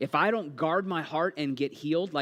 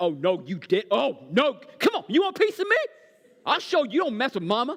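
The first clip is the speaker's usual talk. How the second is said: put-on street-tough gangster attitude, loud, pitched up; 8 semitones higher, 6 dB louder than usual. Acting out a parent whose kid poked a wound: put-on gangster attitude. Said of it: ""Your kids will bring the gangster out in you."".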